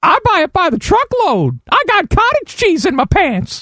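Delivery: very high-pitched character voice. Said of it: "That's my Jay Burson impersonation".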